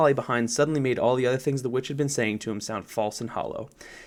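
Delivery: ordinary delivery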